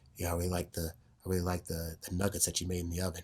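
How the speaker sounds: close, soft, hushed half-whisper. Showing how to speak softly into a partner's ear: soft half-whispered speaking. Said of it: "kinda talking like this".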